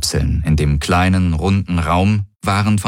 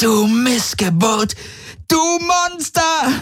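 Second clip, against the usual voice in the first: very high-pitched, slow, drawn-out shrieking screech. Narrating a woman's furious reply to Garland Rokaitor: shrieking. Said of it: "kreischte sie".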